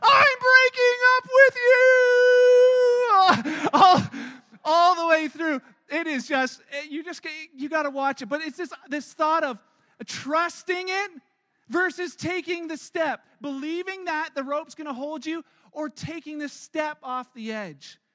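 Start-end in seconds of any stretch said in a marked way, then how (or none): 0.0-3.7 high, slow, drawn-out scream. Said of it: "she screams out".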